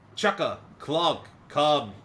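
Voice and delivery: shrill, very loud, high-pitched yelling scream. Voicing a character calling two Kenku over: character screaming loudly. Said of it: "she screams pretty loud".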